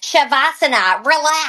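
put-on screaming, called-out Long Island accent. Acting out a yoga teacher addressing a class, in a Janine voice, screaming Long Island accent. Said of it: "screaming at people in her Long Island accent".

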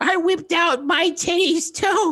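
put-on very high, slow, stretched-out old lady voice. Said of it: "Okay, Millie".

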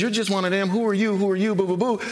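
mock annoying voice, fast. Speaking of God's presence at work, voice the annoying voice of Satan. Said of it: "that annoying voice of Satan that says".

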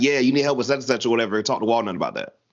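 ordinary talk

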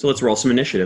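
ordinary talk, nothing marked

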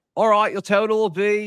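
put-on british-accented speech. Retelling a worker reading out the total of their order, in a strong english accent. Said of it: "she has a very strong English accent".

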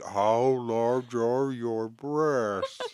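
very slow, put-on disguised voice. Imitating a prank call to a restaurant: disguised prank-call voice. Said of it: "you did it in a voice like".

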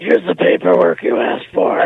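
very low, creaky, rough devil voice. Asked for a creepy coworker voice, speaker hands over paperwork: creepy Satan voice. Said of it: "My creepy coworker voice is the voice of Satan".

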